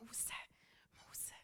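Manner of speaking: soft whispering. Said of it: "först viskar han och säger".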